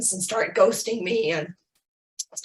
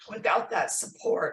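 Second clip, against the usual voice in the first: emotional voice, softening and trailing off to whisper. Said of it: "excuse me for getting emotional".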